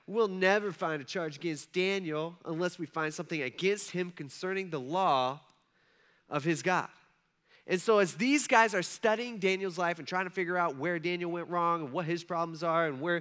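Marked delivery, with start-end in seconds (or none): none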